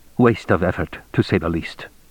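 ordinary delivery

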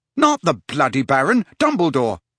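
usual speaking voice

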